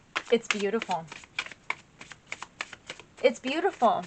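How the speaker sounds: teary voice choking up, near tears. Pausing while speaking to viewers, teary, voice choking up. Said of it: "I'm getting teary".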